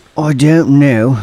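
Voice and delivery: terrible put-on English accent. Asked if the group has anything to add, the speaker replies in a Jason Wilding voice. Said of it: "that's my Jason Wilding voice".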